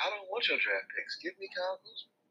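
high, soft, pleading voice. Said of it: "I'm like".

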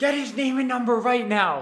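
put-on very high, loud shrieking yell. Retelling how a woman started yelling at her husband, retelling a woman's yell. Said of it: "starts yelling at her husband now".

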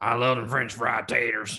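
creepy, closely imitated movie-character voice. Quoting a line from Sling Blade as Billy Bob Thornton: Billy Bob Thornton impression. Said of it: "It sounded just like him".

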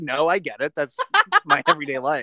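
plain

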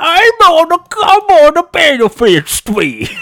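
put-on hard Cockney accent. Joking about appearing on Benefit Street: put-on hard Cockney accent. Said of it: "Just like a shitty act".

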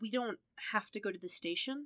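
soft, hesitant, unsure, tentative delivery. Narrator reads a character's question to the driver, tentative. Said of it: "Matt asked tentatively".

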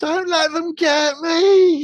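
shrill, very high, loud squeak. Recapping a story, quoting Melly's plea as goblins appear, Melly's squeak. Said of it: "she squeaks".

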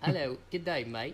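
bad put-on British accent. Offering to show off an accent, the speaker does a bad british accent. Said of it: "you want to hear my, what's that called? British accent?".

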